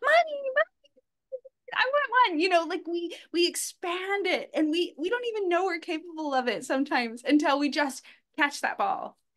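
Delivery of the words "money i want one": put-on very high-pitched small child's little-boy voice. Talking about improv, demonstrating their little boy voice. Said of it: "I could be my little boy voice and be like".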